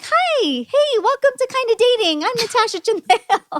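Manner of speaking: squeaky, very high-pitched announcer-style voice. Podcast host recalls how she opened her show years ago, squeaky version of her old voice. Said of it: "kind of like a squeaky version of my voice".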